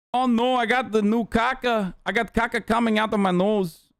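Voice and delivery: practised Brazilian accent. Trying out an accent for a listener, in a Brazilian accent. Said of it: "Your Brazilian accent is on point".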